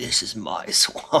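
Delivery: slow, drawn-out whisper close into the ear. Retelling a meme video where Shrek leans in: imitating Shrek whispering. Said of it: "whispering in his ear".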